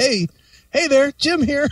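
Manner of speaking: nervous, jittery voice, very high-pitched. Retelling a buddy's first interview question, imitating nervous Jim Bartek. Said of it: "Bartek was just all nervous".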